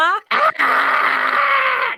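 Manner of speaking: very high, loud scream. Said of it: "if I could just, like, scream".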